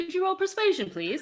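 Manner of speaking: slight British accent. Running a tabletop game, voicing a character to a player, slight British accent. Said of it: "That nearly came out British".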